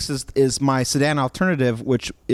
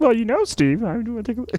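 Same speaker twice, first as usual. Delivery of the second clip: very high-pitched tech-boss voice; 9 semitones higher than usual. Doing a quick impression after being teased: Bill Gates impression. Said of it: "Bill Gates".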